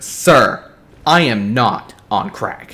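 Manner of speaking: loud, very slow, indignant and offended. Retelling a clerk's answer to the father: imitating an offended reply. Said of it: "really offended".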